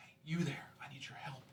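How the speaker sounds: faint, very quiet hushed whisper, barely there. Voicing a trapped creature calling from a basket: whispering. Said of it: "Like, super quietly".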